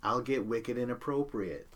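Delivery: ordinary talk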